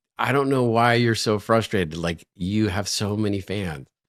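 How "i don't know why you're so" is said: usual speaking voice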